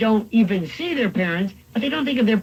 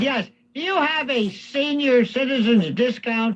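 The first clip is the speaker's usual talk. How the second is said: acted-out, lightly raised, spoken-up voice; 3 semitones higher than usual. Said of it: "you have to talk loudly".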